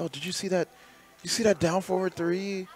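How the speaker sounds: hyped commentator excitement. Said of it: "was commentating and being hype".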